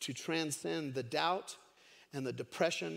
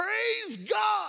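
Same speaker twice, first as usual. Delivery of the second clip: thrilled, excited cry, very high and loud; 8 dB louder than usual. Retelling a woman finding groceries on her porch; acting out an excited cry. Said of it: "she just got all excited".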